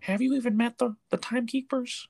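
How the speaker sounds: very high-pitched, small, little put-on character voice. Retelling a character's question about the timekeepers to another person, speak in an Owen Wilson voice. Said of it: "in his little own Wilson voice".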